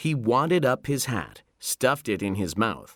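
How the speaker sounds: plain reading voice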